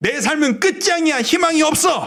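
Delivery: high, despairing outcry.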